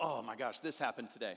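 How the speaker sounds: low, stressed-out, worn-down voice. Retelling how the brother who runs the business sounded on calls: imitating a stressed brother. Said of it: "I could hear the stress in his voice".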